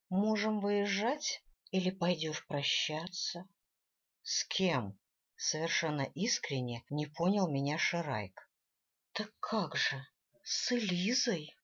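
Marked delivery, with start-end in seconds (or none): 9.1-11.4 put-on breathy elf voice, slower. Narrator reads a woman teasing her companion, breathy, mimicking the elf. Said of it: "с придыханием произнесла я, скопировав интонацию эльфийки".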